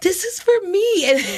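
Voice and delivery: put-on crying voice. Retelling wanting an offer at a friend's event: imitating own past crying. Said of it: "I started crying 'cause I wanted the offer".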